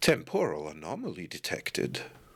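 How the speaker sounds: put-on low, swooping elderly male voice. In a scene, another voice announces a detection, older man's voice. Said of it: "which sounds like a, an older man".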